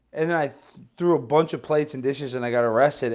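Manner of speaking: ordinary talk, nothing marked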